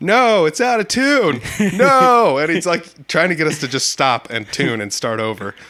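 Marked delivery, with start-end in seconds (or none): 0.0-2.4 shrill, booming, very loud, high, dragged-out yell. Retelling how a guy at the sound booth yelled: imitating someone yelling. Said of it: "you can hear a guy at the sound booth just yell".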